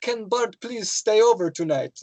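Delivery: put-on English with Polish accent. Retelling asking his family if Bart can stay over, in a Polish accent. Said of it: "I spoke English in a Polish accent".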